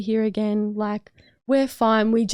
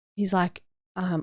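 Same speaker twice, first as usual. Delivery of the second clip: normal talking voice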